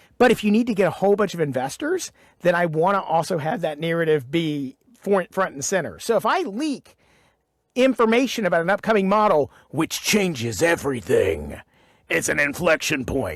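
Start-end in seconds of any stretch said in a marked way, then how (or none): 6.2-13.4 put-on, dramatic movie-trailer voice. Explaining the narrative to pitch to investors, in a movie voice. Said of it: "This is my movie voice".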